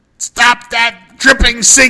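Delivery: very high, shrill, drawn-out yelled scream. Retelling how a dad screamed at an aunt: imitating someone screaming. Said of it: "he's screaming at my aunt".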